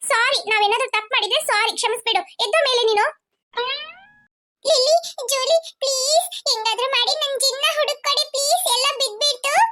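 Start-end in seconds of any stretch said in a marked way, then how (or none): 4.7-9.5 crying, tearful pleading, higher pitch. Begging Lilly and Julie for help, crying while pleading. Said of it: "ಅಳಬೇಡ".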